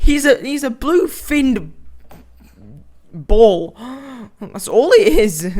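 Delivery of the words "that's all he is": voice breaking and cracking mid-line. Talking about a character the speaker hates: voice cracking. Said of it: "What was that voice crack?".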